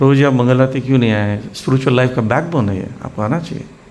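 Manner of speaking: calm, soft, gentle tone. Rephrasing a complaint without shouting, in a soft gentle tone. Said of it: "अब इसको software में से बोलेंगे".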